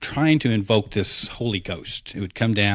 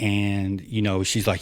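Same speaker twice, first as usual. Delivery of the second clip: usual speaking voice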